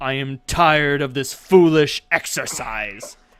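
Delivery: roaring, very loud bellow. A game master voices an opponent pinning the player's character in midair, bellowing. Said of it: "he bellows".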